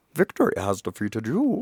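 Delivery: villain voice with wide, swooping pitch. Recalling doing a voice that others loved, in a Bane voice. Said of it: "they still did the Bane voice".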